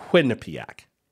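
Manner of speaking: Quinnipiac with heavy stress on first syllable Quin. Giving the pronunciation of the university's name before a poll: stress on Quin in Quinnipiac. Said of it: "emphasis on the first syllable".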